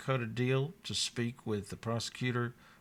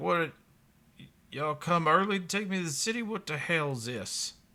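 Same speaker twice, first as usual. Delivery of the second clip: put-on weathered old man voice, pitched up; 6 semitones higher, 3 dB louder than usual. Voicing a weathered gray-haired man stepping out of a hut: voicing the gray-haired man. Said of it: "he's like".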